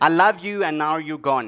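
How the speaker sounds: ordinary talk, nothing marked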